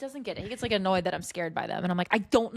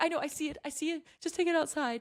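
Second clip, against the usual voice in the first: mock hard sobbing, high, pleading tone; 7 semitones higher, 3 dB quieter than usual. Speaker retells what she said to Jordan, imitating crying. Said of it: "I was crying so hard".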